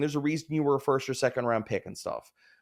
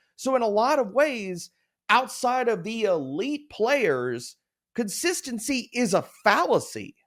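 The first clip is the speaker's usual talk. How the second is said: impassioned, heartfelt, passionate, pitched up; 8 semitones higher than usual. Wrapping up an argument to a listener, passionate. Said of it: "I can hear the passion in your voice".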